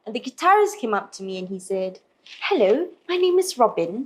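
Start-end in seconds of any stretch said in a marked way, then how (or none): 2.4-4.0 clumsy, bad put-on British accent. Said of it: "I don't do a very good British accent".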